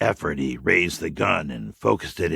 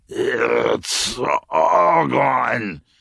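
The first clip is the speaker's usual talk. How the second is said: hoarse, raspy, wet, pitched-up sick voice; 7 semitones higher, 4 dB louder than usual. A sick young officer, revolver leveled, speaks to Andy: raspy voice, liquid with virus. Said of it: "In a raspy voice, liquid with virus".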